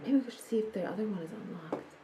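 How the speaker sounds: very soft, hushed whisper, barely audible. Not wanting the guy on the other side of the door to hear, whispering. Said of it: "I'm just gonna whisper".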